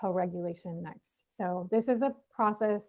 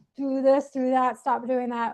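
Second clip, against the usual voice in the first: loud, raised, bossy commanding tone; 3 semitones higher, 6 dB louder than usual. Explaining how not to speak to a struggling baby, demonstrating talking loud. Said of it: "We use soft sounds".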